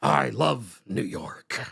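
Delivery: very low, slow, gravelly voice, dragged out. Imitating Eric Adams trying a new voice: Eric Adams doing a gravelly voice. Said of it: "talk with a little bit more of a gravelly voice and, and with awkward pauses".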